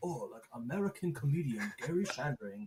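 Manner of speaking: words spoken in a put-on Chinese accent. Reading a comedian's name off a Google page: put-on Chinese accent. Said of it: "reading his name in, like, a Chinese accent".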